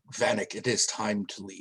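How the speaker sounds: whispered, very low and soft. A player voices Nima whispering in to Vanek, Nima whispering. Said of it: "kind of just like whisper in".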